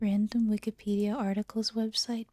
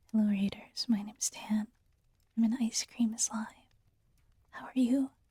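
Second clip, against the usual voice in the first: mild, soft-spoken delivery. Streamer greeting incoming raiders, doing his bit in a soft-spoken voice. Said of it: "do my thing in in soft spoken voice".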